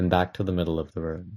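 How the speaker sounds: plain reading voice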